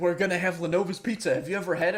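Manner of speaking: imitated excited voice. Retelling a friend offering pizza: imitating Matthew. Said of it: "Perfect impression of you".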